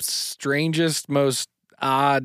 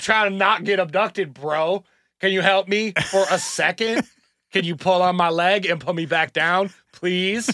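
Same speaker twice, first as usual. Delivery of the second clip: put-on tipsy voice, higher pitch; 5 semitones higher than usual. Imagining the story told at a bar, imitating Charles telling it drunk. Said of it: "Charles is, like, four deep, and he's like".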